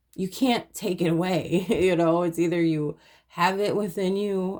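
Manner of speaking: words spoken while chuckling and laughing. Speaker addressing the listener directly, laughing while talking. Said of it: "I'm laughing about it".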